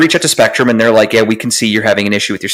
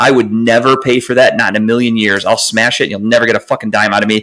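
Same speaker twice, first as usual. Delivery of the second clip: ordinary delivery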